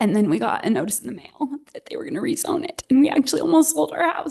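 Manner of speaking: emotional, close to crying. Resident recounting almost selling the house after a rezoning notice, on the verge of tears. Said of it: "I might cry about it".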